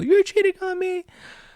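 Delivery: very high, pitched-way-up, comic jokey whine. Voicing a girlfriend's Sims character for laughs: imitating his girlfriend's voice. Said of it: "I would do my girlfriend's voice".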